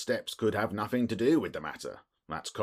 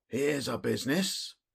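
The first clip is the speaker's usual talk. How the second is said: hoarse, muffled, husky cry, pitched up; 6 semitones higher than usual. A man arriving with an inspector and Thaddeus Sholto, muffled, husky cry. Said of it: "he cried in a muffled, husky voice".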